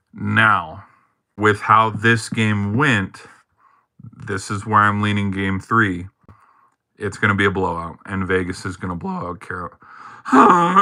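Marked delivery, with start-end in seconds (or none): 8.9-10.8 voice catching, breaking and cracking mid-sentence. Predicting game three of a series, voice cracking. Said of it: "My voice cracked".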